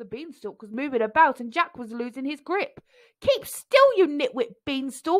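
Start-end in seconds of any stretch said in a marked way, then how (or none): 3.2-5.2 bossy, villain-like high, loud yell. Narrator reading a story, Jack yelling as he loses his grip on the beanstalk.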